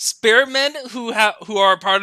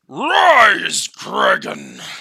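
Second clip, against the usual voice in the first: deep, low, swooping voice, the word Rise drawn out; 4 semitones lower than usual. A dwarf king commanding Kraken to rise, in Thorgrim's deep, booming voice. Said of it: "Thorgrim said this deep, booming voice".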